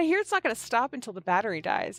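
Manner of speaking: ordinary delivery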